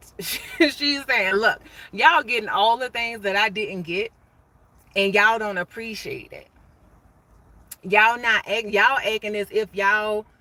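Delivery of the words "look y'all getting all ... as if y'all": ordinary talk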